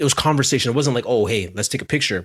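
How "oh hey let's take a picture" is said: ordinary talk, nothing marked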